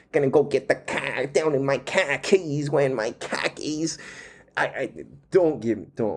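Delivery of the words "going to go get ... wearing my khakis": Boston accent with broad vowels. Speaker, saying they needn't perfect it, does a quick Boston accent. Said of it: "the Boston accent".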